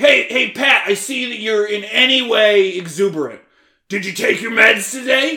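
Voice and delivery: very high, shrill, very loud yelling. Imitating the people who yell at the speaker every day: mock-yelling at pat. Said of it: "you all yell at me every day".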